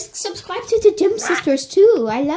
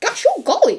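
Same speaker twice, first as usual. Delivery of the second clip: high, pitched-up put-on cartoon voice; 7 semitones higher than usual. Repeating a cartoon exclamation as an impression: Goofy voice. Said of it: "was that a really good impression of what is it called? Goofy?".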